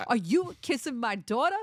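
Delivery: poor put-on New York accent, loud and high. Acting out a father confronting someone kissing his daughter: bad New Yorker accent. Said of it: "You do it there since you're from there".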